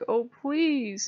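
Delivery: earnest, high, pleading begging voice. Retelling how a god begged to be allowed to stay: imitating someone begging. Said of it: "And he's begging me".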